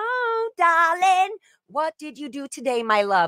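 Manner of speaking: fake British accent, very high and drawn out. Acting out a scolding inner voice: put-on British accent. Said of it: "You almost sound British".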